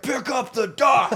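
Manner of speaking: acted, shrill, high-pitched, loud furious yell. A storyteller retells a father angrily shouting an order from the bank at his child, imitating angry yelling. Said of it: "I was scared to pick it up".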